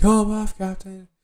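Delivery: very high, very loud yelling. Retelling a fight scene, the speaker voices the captain's crew: retelling the crew yelling. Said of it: "his crew is yelling".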